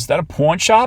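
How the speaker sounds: put-on thick old New York lady accent. Reading an overheard old lady's question: heavy new york accent. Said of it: "an old lady with a heavy New York accent".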